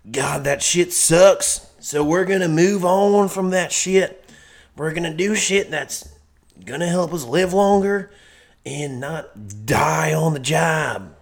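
put-on slow, laid-on-thick country accent. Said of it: "That was the best country accent I've ever heard".

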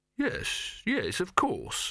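slow, high, calming, placating, soothing voice. Silverfish answers Dibbler, who demands to know what he's talking about, soothing. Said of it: "said Silverfish soothingly".

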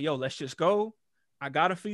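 ordinary delivery

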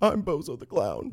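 high, slow crying wail.

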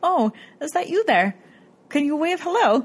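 imitated Canadian-sounding voice. Retelling what a ghost investigator asked a figure: imitating Gary, sounding Canadian. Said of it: "you sound Canadian".

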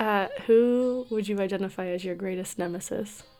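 hushed, quiet half-whisper. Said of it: "so that I can whisper so she can't hear me".

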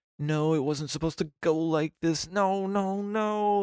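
put-on frantic, very high-pitched panicked freak-out. Recounting a scene where a man sees news footage of Batman, retelling a character freaking out. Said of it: "he's just like freaking the fuck out".

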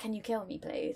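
said jokingly. Retelling what they jokingly asked their manager at work: retelling a joking remark. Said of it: "Because I jokingly was like".

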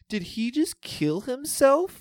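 put-on innocent tiny little girl voice, very high, loud. Recounting a moment at a movie, imitating a little girl in an adorable little voice. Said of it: "in like the most adorable little voice".

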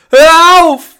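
piercing shriek, very high, very loud, shrill. A wife pulls her husband away from their son, screaming. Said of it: "schrie sie".

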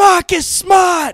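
very high, very loud, shrill scream. Retelling a late-night phone call, reenacting the caller screaming a name. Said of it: "Just screaming it over and over".

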